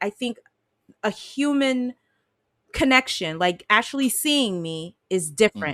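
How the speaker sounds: ordinary delivery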